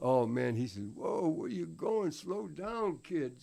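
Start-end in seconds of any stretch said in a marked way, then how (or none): 0.9-3.4 husky man's voice, a bit high, calling out. Retelling what a man said down in the gym basement, imitating a man's husky voice. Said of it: "He had a real husky voice".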